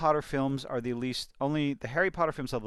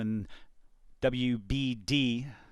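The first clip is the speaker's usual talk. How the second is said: deliberately slow, careful pronunciation; 3 semitones lower than usual. Discussing the film franchise's owners, saying the company name slowly. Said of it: "I had to say that slowly".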